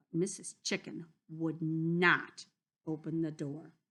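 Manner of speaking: ordinary delivery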